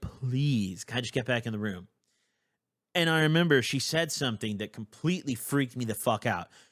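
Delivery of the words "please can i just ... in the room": earnest, imploring, pleading tone. Retelling what they said to a woman they were pleading with, imitating pleading. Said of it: "I'm like pleading with this woman".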